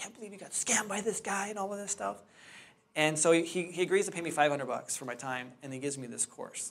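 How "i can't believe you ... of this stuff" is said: play-acted high, furious outburst on the edge of crying. Retelling his wife's reaction when he calls her up, retelling wife's furious, tearful reaction. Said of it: "she's furious, and she's like in tears".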